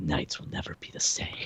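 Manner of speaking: whispered very quietly and low. Describing how the opening credits end: whispering low like David Hasselhoff. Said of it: "he kind of whispers it".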